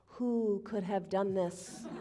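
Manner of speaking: stage-hushed preacher-style voice. Telling how a preacher, narrating the story of Jesus, asked his listeners, hushed voice. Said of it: "in a hushed voice".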